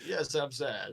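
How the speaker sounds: sunny, upbeat, cheerful, happy tone. A performer in a scene claims to be sad, saying it in a happy tone. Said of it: "You say it in such a happy way".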